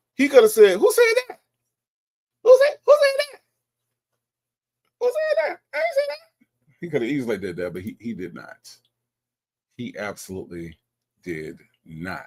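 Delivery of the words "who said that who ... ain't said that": very high, squeaky, rising, raised put-on voice. Imagining how someone could have denied saying something, imitating a high-pitched voice. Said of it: "in his high pitched I don't know nobody".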